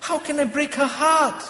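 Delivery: put-on speaking with a Malaysian accent. Retelling what a person will say back, the speaker tries a put-on Malaysian accent. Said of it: "See me trying to put on that Malaysian accent?".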